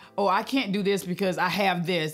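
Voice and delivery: ordinary talk, nothing marked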